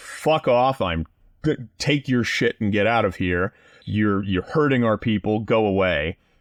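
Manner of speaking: ordinary talk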